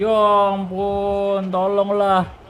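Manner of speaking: loud, high, despairing wail and groan.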